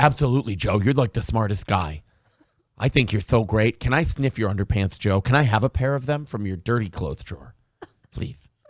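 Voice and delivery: adoring, fawning host voice, gushing like a fan. Imagining what Lex Fridman would say to Joe: Lex Fridman impression. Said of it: "And then Lex Fridman would go".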